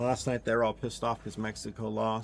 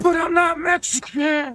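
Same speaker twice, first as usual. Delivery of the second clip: very loud, very high-pitched enraged furious yell; 11 dB louder than usual. Retelling how the boss snapped back at a joke: imitating the boss yelling. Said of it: "Like, all loud, bro".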